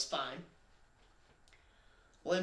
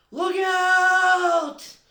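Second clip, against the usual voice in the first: loud high-pitched yelling.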